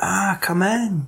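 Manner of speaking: put-on creepy whisper, slow, soft and sinister. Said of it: "She's like".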